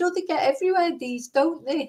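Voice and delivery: put-on Liverpool accent. Speaker retells what a man said that made them laugh: Liverpool accent. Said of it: "in his Liverpool accent".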